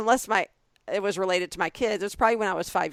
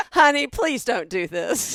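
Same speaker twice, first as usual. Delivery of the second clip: put-on old woman voice with Southern US accent; 4 semitones higher, 4 dB louder than usual.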